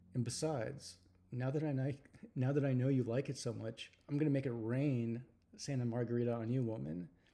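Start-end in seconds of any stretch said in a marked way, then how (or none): none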